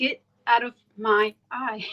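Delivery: normal talking voice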